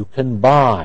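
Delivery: stress on buy, can kept light. Teaching the difference between can and can't: stress on buy. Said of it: "Stress on buy".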